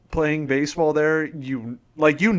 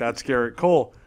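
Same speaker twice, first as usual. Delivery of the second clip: ordinary delivery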